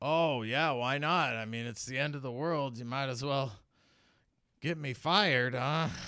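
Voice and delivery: put-on drunk-sounding, sloshed, slurred speech. A game master voices a sloshed character answering the players, drunk, slurred. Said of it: "who is sloshed".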